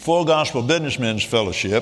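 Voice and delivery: ordinary delivery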